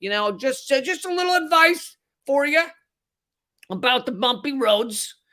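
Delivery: mobster voice. Acting out a mafia hitman who comes up to give advice: mafia hitman voice. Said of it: "the hitman comes up and he goes".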